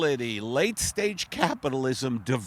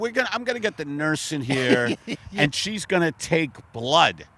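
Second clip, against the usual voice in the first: normal talking voice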